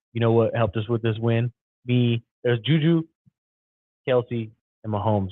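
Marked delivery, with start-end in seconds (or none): none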